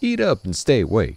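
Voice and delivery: put-on American southern accent. A character speaking in the scene: southern accent. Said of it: "he definitely has more of a southern accent".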